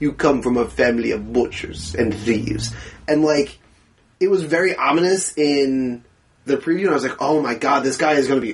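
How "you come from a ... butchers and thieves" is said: put-on low voice with thick Russian accent. Describing a movie preview, quoting Whiplash's line in a thick Russian accent. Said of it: "he's doing that like thick russian accent".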